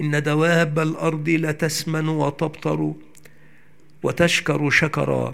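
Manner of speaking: ordinary delivery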